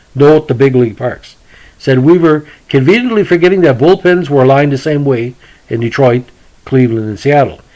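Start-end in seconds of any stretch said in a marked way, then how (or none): none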